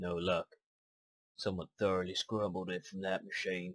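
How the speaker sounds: put-on cartoon voice. A game character speaking to the player, in a Scruffy voice. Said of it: "I don't know why I sound like Scruffy".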